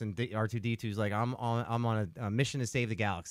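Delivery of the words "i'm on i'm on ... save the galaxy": plain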